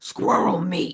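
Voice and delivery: put-on strong New York accent with a gravelly voice. Retelling a New Yorker's answer to a man's question, gravelly New Yorker voice. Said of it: "ultimate New Yorker in the gravelly voice".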